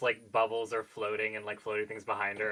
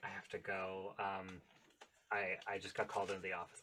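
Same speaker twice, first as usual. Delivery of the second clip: very quiet, hushed half-whisper; 3 semitones lower, 11 dB quieter than usual. Voicing a character slipping away from a friend: half-whispering in character. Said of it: "whispers in her ear".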